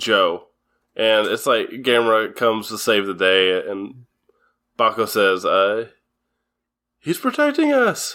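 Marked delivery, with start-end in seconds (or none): 7.0-8.2 put-on very high child's voice, pitched way up. Retelling a scene where the child Bako says Gamera protects them: imitating Bako's child voice actor. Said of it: "your child voice actor impressions were on point".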